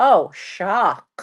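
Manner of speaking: put-on very slow, sarcastic, smartass facetious drawl. Retelling a reply to a doctor's ulcer news: retelling own facetious remark. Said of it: "I've never seen anybody be facetious".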